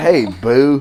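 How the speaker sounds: awkward, stiff-sounding slang delivery.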